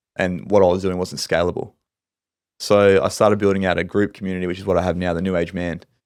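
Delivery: normal talking voice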